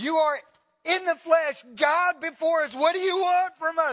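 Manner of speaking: high, loud, demon-like screaming cry. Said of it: "they're screaming worship to God".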